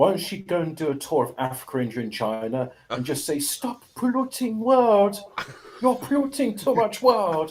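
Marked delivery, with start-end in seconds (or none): 3.4-7.5 very high, put-on non-native foreign English accent. Mocking Greta Thunberg in conversation, doing a Greta Thunberg accent impression. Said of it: "I'm I'm trying to do her accent".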